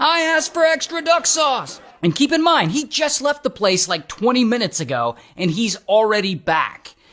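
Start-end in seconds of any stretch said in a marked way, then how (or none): 0.0-1.8 imitated yelling, higher pitch. Retelling how an angry customer burst back into the restaurant: imitating someone yelling. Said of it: "he starts yelling like".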